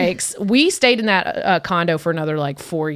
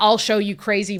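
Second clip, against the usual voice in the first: plain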